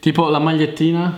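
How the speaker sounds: ordinary talk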